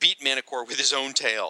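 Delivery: ordinary delivery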